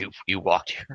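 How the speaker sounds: muttered under the breath. Speaking in character to a player who walked here: muttered under breath. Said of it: "under my breath".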